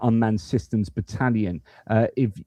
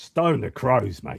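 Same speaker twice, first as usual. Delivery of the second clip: fake, put-on Australian accent with twang. Reacting to a story about an australian moderator: put-on australian accent. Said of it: "it just gives me an excuse to speak Aussie".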